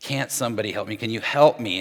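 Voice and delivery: mock exasperated, frustrated tone. Acting out Martha asking for help: imitating frustrated Martha. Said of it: "As Martha's so frustrated, she's like".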